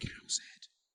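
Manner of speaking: soft, hushed spooky whisper. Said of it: "I can't hear you".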